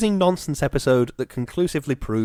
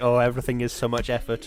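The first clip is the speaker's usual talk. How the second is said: plain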